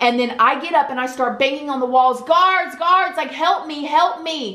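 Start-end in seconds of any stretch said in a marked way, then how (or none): 2.2-4.6 high-pitched, loud yelling. Shut in a tiny room, recalling banging on the walls for guards: retelling yelling for help. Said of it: "when I was yelling".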